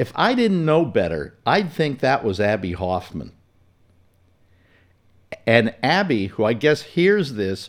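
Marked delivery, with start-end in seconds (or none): none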